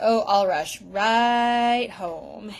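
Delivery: put-on sarcastic tone. Retelling a kid's reply to a parent about punishment: imitating a sarcastic reply. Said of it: "The sarcasm here is biting".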